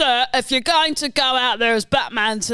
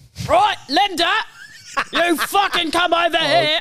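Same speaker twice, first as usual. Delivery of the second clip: put-on Birmingham gangster accent, from the throat; 6 semitones higher than usual. Parroting accents, the speaker does a Peaky Blinders Tommy accent. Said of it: "The Peaky fucking Blinders".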